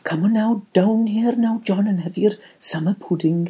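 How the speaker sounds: put-on, high-pitched, vague Welsh grandmother accent. Recalling a grandmother's house in wales, quote her in a put-on accent. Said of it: "What accent was that?".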